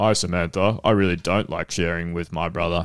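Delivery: put-on grumpy puppet voice. Describing a second puppet talking to Samantha, in a mock-grumpy puppet voice. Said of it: "they sound grumpy".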